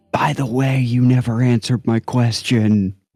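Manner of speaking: whispered line in put-on voice. Leaning in to another character's ear in a game scene: whispering in character. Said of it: "and whisper in Dimitrix's ear".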